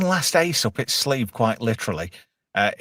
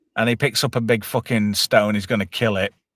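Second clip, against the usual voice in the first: ordinary talk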